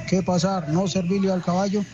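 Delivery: plain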